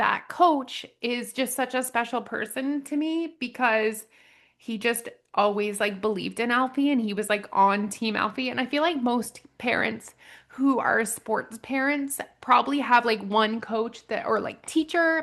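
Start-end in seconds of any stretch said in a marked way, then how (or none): 0.0-8.5 tearful, emotional, on the verge of crying. A parent talking about a coach who is special to them, tearful. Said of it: "okay, I'm gonna cry again".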